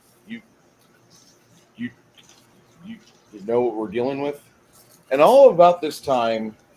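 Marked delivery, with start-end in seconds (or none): 0.2-4.4 worried, nervous stammering stutter, said more quietly. Voicing a chainmail-clad companion who gives the players a worrisome look: worried, stammering. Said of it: "he kinda gives you a worrisome look".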